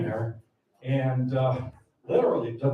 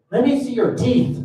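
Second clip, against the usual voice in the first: put-on lisp, higher and louder; 11 semitones higher, 8 dB louder than usual. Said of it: "he talked with a lisp".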